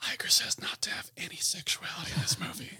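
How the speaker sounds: hushed whisper, spoken under the breath. Acting out somebody who came down with a message: imitating someone whispering.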